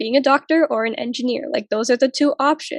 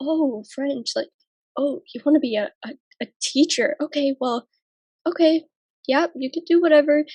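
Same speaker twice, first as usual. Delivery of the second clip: put-on grudging, disapproving, judgmental old man voice; 3 semitones higher than usual. Speaker telling how family reacts to their plans, mimicking grandpa's judgmental tone. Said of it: "I can hear the judgment in my grandpa's voice".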